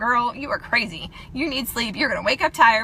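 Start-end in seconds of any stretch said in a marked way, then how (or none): none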